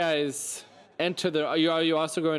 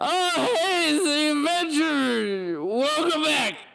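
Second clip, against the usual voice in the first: loud, very high, drawn-out put-on character voice; 13 semitones higher, 4 dB louder than usual. Voicing a slumped tavern patron greeting the adventurers: loud character voice. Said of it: "You get so loud when you do that voice".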